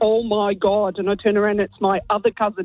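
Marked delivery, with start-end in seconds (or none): 0.0-1.0 put-on very thick Derry accent, much slower. Retelling how you overheard your other cousin in the bathroom, in a really thick Derry accent. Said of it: "in a really thick Derry accent".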